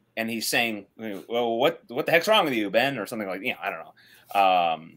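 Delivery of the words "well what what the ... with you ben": cross, irritated, angry tone. Acting out a comic character's line as an example: acting out Felix angry. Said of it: "Felix a-, a-, angry".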